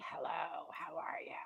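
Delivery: put-on kennel-cough voice. Describing the voice she gets after Vegas, put-on kennel-cough voice. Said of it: "kennel cough voice".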